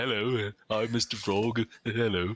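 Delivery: every word dragged out, as slow as possible. Showing the other speaker the Mister Frog impression: Mister Frog impression. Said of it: "a better Mister Frog impression than me".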